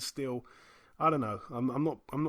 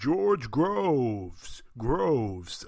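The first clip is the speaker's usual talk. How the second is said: put-on ring announcer voice, louder; 5 dB louder than usual. Retelling hearing an announcer rehearse on the microphone: David Diamante impression. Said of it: "I could hear him just repeatedly".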